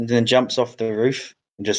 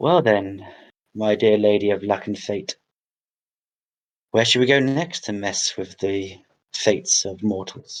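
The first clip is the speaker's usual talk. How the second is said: quiet aside muttered under the breath; 2 semitones lower than usual. As he heads off into the distance still waving, muttering under his breath. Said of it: "under his breath he goes".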